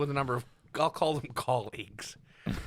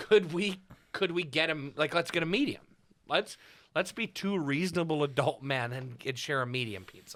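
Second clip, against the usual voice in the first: ordinary talk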